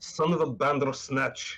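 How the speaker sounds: exclaimed delivery. Voicing a character who falls out of spider webs: exclaiming in character. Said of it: "and he exclaims".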